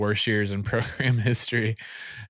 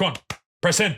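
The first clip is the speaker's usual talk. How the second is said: firm, no-nonsense, stern tone, pitched up; 7 semitones higher than usual. Retelling how the athletic trainer gave orders while taping wrists: imitating a stern athletic trainer. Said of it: "he's very, very stern about it".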